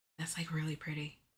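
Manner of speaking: quiet whispering. Looking at patterns to add to a cart, whispering. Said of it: "Why am I whispering?".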